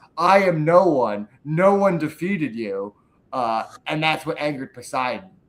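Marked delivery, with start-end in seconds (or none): none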